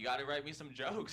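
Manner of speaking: ordinary talk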